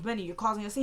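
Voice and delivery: ordinary talk, nothing marked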